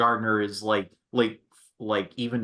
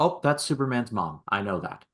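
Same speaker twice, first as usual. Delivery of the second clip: ordinary delivery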